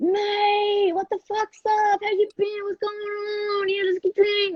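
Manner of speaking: exaggerated broad ocker Australian accent, pitched very high. Retelling how talk changed on meeting an Australian friend at a party: broad bogan Australian accent. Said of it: "so bogan".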